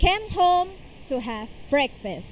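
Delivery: plain reading voice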